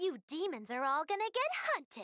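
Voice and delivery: very high, soft, anime-style voice. Narrating a story, voicing a stranger who calls out to demons, anime character voice. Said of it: "I hear a voice straight out of an anime".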